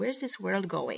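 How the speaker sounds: plain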